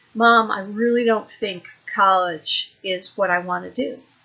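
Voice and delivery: ordinary delivery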